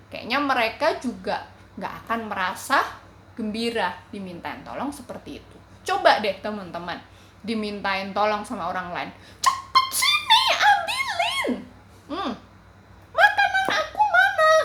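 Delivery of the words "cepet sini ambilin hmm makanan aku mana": put-on very high, bossy, demanding, drawn-out voice. Acting out how others ask for help, imitating someone bossy. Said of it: "Coba kalian di kayak gituin. Kalian senang nggak?".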